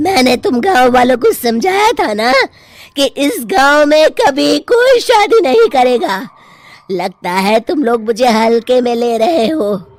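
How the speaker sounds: loud, menacing, threatening cartoon witch voice. In a cartoon story, the witch confronts the villagers over the wedding, witch's voice. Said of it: "चुड़ैल जमींदार की बेटी को उठा लेती है। / जब वो चुड़ैल एक इंसान थी, तब ठीक उसकी शादी करने वाले दिन ही उसकी और उसके होने वाले पति की एक दुर्घटना में मौत हो गई थी। / अब देखती हूँ बिना दुल्हन के तुम लोग श".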